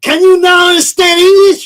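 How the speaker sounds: put-on very thick Filipino accent, yelled high and loud. Retelling a boot camp instructor's favourite line: imitating thick Filipino accent. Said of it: "he's got a very thick Philippine accent".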